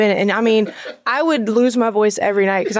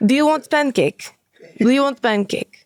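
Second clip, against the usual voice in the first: angry-sounding put-on Russian accent; 3 semitones higher than usual. Showing how anything said in a Russian accent sounds, in an angry Russian accent. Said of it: "I love Russian accents".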